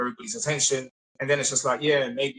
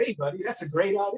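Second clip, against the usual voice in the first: high, put-on American accent, done on purpose; 7 semitones higher than usual.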